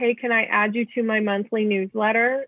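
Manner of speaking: ordinary delivery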